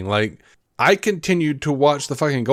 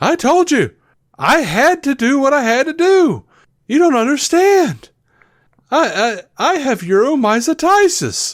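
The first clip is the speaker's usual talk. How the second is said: very high, slow, badly acted bluffing tone; 13 semitones higher, 4 dB louder than usual. Retelling a sitcom scene where Jerry excuses himself to a cop: imitating Jerry bluffing, poorly acting. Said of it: "he's full of shit and trying to, like, poorly act".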